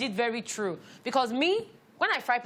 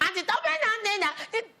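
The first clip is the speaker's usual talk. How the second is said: put-on high childlike voice. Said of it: "she's like".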